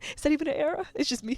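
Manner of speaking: teary, crying voice, talking through tears. Talking about trying to be the cool girl, crying. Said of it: "I'm like crying".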